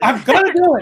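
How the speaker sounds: pretend shouting. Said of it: "I'm just yelling".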